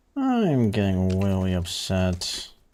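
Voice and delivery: slow, drawn-out mock upset voice.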